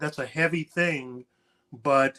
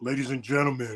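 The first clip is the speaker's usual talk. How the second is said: put-on serious voice, mock-serious, toned down a notch; 2 semitones lower, 4 dB quieter than usual. Mocking how Sean Mason sounds when he gets serious, in Sean Mason's mock-serious voice. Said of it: "He's like".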